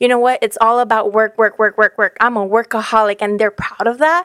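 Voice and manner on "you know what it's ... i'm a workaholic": ordinary delivery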